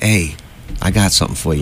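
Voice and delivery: ordinary talk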